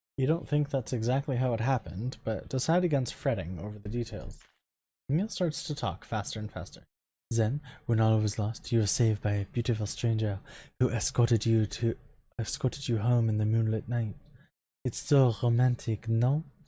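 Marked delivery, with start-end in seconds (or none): 7.9-16.5 put-on French accent, Parisian style. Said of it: "Jordan's laughing at my accent".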